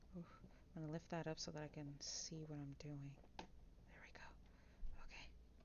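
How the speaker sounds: soft, hushed, murmured whisper. Assembling a Lego set and lifting it to see, whispering. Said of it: "I don't know why I'm whispering".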